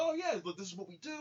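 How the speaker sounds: soft-spoken, easy, agreeable voice. Describing a film scene, acting out the doctor's line: Jason Isaacs soft-spoken doctor. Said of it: "playing like this very kind of soft spoken".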